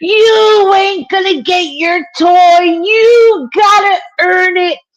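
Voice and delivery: screeching, very high scream with long drawn-out "you". On the Walmart floor beside the son, the parent retells screaming at him. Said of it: "I started screaming".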